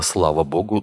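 ordinary delivery, nothing marked

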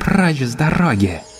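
hissing, sibilant delivery. She faces a charging wall of armored warriors, hissing. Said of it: "прошипела она".

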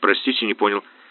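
plain

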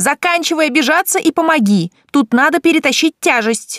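high-pitched, yelled voice. The narrator calls to Loki for help with something heavy, yelling. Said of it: "завопила я".

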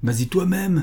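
put-on young lad's high yelling shout. A kid in the crowd at a fire answers a man begging for help; shouting. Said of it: "cria un gamin dans la foule".

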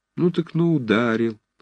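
kindly, affectionate, tender, gentle tone. Nazansky replies to Romashov, who was struck in the face, speaking tenderly. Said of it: "возразил ласково Назанский".

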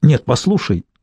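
ordinary delivery

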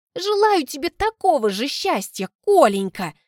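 words through gritted teeth. The narrator replies to Kolenka, through gritted teeth. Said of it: "Цежу сквозь зубы".

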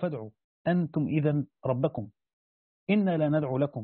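ordinary talk, nothing marked

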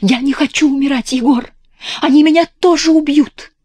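high, loud, terrified scream with sudden force. A woman suddenly pulls away from a man, screaming in terror. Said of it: "крикнув в ужасе с неожиданной силой".

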